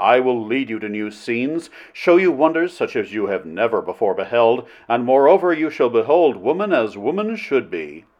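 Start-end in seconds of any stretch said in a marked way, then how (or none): none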